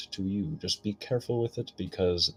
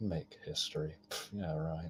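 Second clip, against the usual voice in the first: quiet muttering, lower and quieter; 3 semitones lower, 12 dB quieter than usual. Playing a character who watches someone leave, muttered under his breath. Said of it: "just under my breath".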